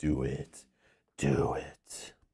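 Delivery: very low, hushed, quiet evil emperor voice. While playing a game, the speaker does a Palpatine voice. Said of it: "Palpatine voice".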